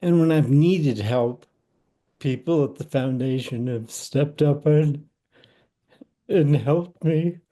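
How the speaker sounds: choked-up, emotional, voice catching with feeling. Thanking the nearby foundation for its help, the speaker is getting emotional. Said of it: "I'm getting emotional".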